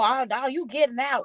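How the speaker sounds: put-on combative, confrontational, in-your-face aggressive delivery. Imitating the other speaker's aggressive remark in the corner: imitating an aggressive tone. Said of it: "you sound like you a little aggressive".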